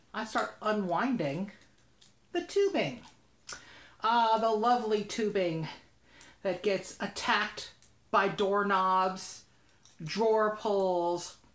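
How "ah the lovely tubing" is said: ordinary talk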